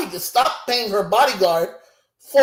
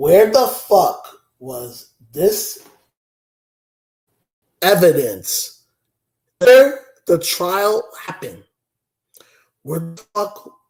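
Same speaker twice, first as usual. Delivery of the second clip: calm, composed, courteous, polite tone; 6 semitones lower than usual. Speaking to viewers about a trial, having said they won't yell, calm and polite. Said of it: "gonna say this very calm and very politely".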